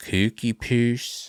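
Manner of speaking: put-on throaty voice, slightly Swedish-sounding. Repeating the name Cookie Puss for another read: throaty, Swedish-sounding put-on voice. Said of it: "She almost goes into her hormone monster voice a little bit. It's in her throat".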